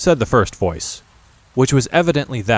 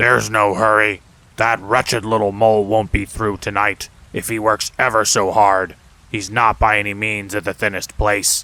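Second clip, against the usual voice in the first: gruff, rough, low, deep goblin growl. Narrating one goblin replying to another: rougher, deeper goblin voice. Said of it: "A rougher and deeper voice replied".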